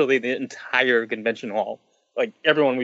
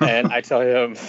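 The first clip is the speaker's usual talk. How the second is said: plain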